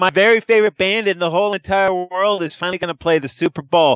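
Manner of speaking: sarcasm sounding like enthusiasm. Reacting to a halftime band announcement: mock sarcastic excitement. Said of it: "That is sarcasm".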